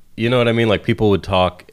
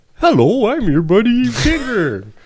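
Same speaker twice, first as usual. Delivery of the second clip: very high, swooping human voice gone doggish. Describing how a dog face could talk, the speaker demos a doggish human voice. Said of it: "a human voice that kind of sounds doggish".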